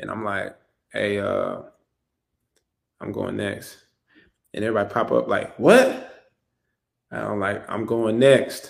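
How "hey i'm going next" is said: muttering under breath, quieter, much slower. Retelling telling his family about the draft; retelling saying it under his breath. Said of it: "kind of under my breath".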